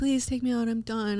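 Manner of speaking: mock tearful voice. Retelling pleading with a goalie coach to be taken out: imitating own past crying.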